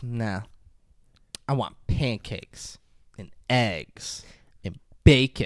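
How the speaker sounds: put-on very slow, low, sultry, seductive voice. Retelling a movie scene where she asks for breakfast: imitating a sexy delivery. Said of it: "She's doing it all sexy".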